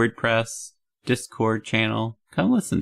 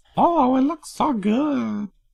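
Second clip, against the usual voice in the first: put-on teenage girl voice, very high; 13 semitones higher, 3 dB louder than usual. Speaker tries out a default teen girl voice; teen girl voice. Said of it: "That's just my default for teen girl voice".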